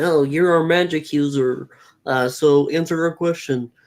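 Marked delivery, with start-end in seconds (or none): none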